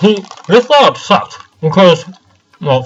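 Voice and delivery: talking with mouth full. Commenting on the game setup while eating trail mix: talking with mouth full. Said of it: "I just put trail mix in my mouth".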